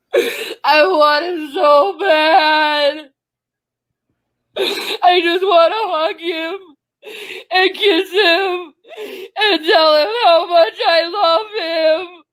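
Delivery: put-on baby-like crying, wailing sobs. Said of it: "You cry like a baby".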